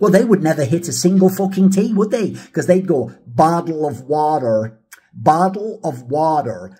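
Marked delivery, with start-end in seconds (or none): 3.3-6.5 very slow, drawn-out American accent, every t a d. Explaining how americans pronounce a phrase, doing an american accent impression. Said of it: "How would an American say bottle of water?".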